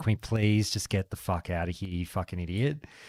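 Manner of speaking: put-on exasperated pleading. Retelling a companion's words with her head in her hands: imitating exasperated plea. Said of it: "got her head in her hands, just going".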